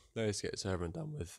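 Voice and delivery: voice cracking. Narrating a game episode before the next race, voice cracking. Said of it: "voice crack".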